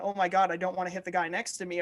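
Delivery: ordinary talk, nothing marked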